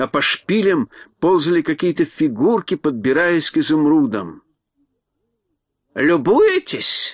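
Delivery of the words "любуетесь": sharp, harsh, piercing, cutting voice. A crow calls out from behind two onlookers in a sharp voice. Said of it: "раздался резкий голос".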